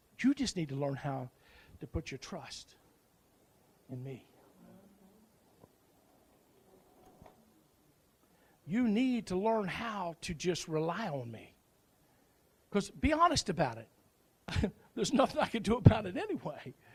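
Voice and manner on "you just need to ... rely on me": very low, softest, calm reassuring voice. Retelling his dad's reply when asked why he was stressed, softest, calmest voice. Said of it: "in the softest, calmest voice".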